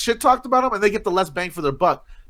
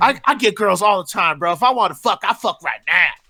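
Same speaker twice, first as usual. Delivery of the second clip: cocky, swaggering put-on bro voice. Retelling a guy who came along to a strip club; imitating a guy's voice. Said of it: "That's why I'm doing the voice".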